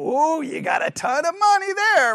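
high-pitched, dry, sarcastic tone. Showing how a remark to a little kid sounds sarcastic. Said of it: "I'm being sarcastic".

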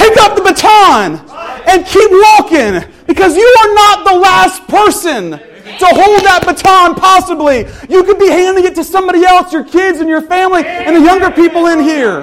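fervent, high, loud shouting.

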